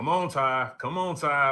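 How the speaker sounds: loud, high yell of encouragement. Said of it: "he'll be yelling".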